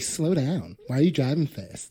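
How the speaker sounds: spiteful, nagging voice. Retelling what a woman in the passenger seat said while he drove, imitating a spiteful tone. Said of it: "that spiteful tone of voice".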